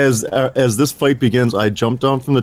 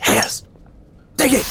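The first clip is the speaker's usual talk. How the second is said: forceful, yelled stage whisper; 14 semitones higher than usual. Player voicing their character beckoning the others over, in a yelling whisper. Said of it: "I do the yelling whisper".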